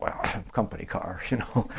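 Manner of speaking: quiet, breathy laughter through words.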